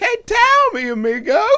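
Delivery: squeaky cartoon voice, very high and loud. Playing with mock Spanish phrases: DNA strand voice. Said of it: "I sound like the DNA strand".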